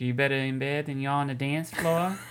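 put-on nasal celebrity voice. Quoting her line from the film in a Fran Drescher impression. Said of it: "That's a good impression".

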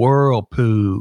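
put-on Deep South Alabama accent. Pronouncing a word as if from deep in Southern Alabama. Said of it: "as if you were from deep in Southern Alabama".

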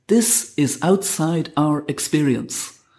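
acted, resolute, very firm, no-nonsense, final-sounding delivery. Recalling a woman's answer to their question, retelling a firm reply. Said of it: "in a very firm voice".

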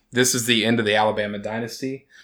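ordinary talk, nothing marked

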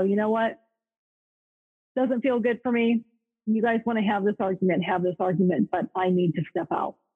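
ordinary talk, nothing marked

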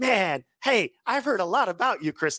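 put-on excited voice. Speaker recalls a man meeting him for the first time, imitating an excited greeting. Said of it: "He's like all excited".

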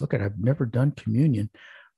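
imitated whisper. Retelling what a man whispered to a woman during communion, imitating a whisper. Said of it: "So he whispers to her".

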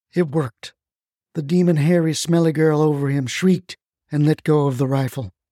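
ordinary delivery, nothing marked

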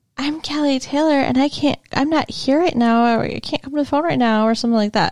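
put-on woman's voice. Retelling what a woman said, impersonation of Kelly Taylor. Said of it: "some kind of impersonation of Kelly".

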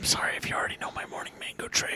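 soft, hushed whisper. Imitating a video clip of Kevin Bacon whispering: imitating Kevin Bacon whispering. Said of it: "He's whispering like".

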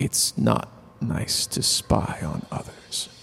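whispered, hushed, soft, barely audible. Voicing a character who leans in close to a hidden listener: very soft whisper. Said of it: "And he whispers, so softly that you can barely hear it".

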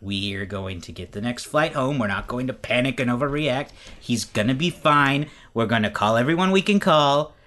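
ordinary talk

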